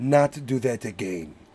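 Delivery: mock darker, menacing voice. Retelling a movie line as it turns darker: imitating a darker tone. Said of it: "he goes darker".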